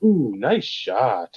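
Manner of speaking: dry, insincere, acted-out sarcastic praise. Recalling friends teasing each other over a horrible shot: retelling sarcastic praise. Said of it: "it'd be sarcastic".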